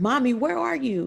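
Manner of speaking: high, almost frantic voice, mocked. Recalling the day her daughter phoned her, imitating a frantic daughter. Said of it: "She was almost frantic".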